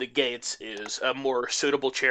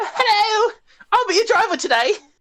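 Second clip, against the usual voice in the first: very high, very loud, shrill youthful voice; 8 dB louder than usual. Voicing a young driver who greets the players. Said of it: "character leans over like".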